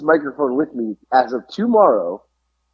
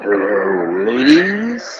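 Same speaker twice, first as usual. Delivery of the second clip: scary, deep, creepy snowman voice; 4 semitones lower than usual. Trying out the Snowman voice after the elf, scary creepy voice. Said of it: "That's kind of a scary, creepy one".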